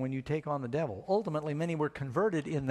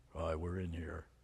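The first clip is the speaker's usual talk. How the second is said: very deep, quiet, hushed, guttural possessed devil voice; 10 semitones lower, 9 dB quieter than usual. Describing possessed people whose voice changes, then showing it; weird guttural devil voice. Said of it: "their voice changes and gets really weird and guttural".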